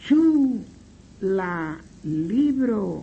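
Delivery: very slow, deliberate dictation in Esperanto.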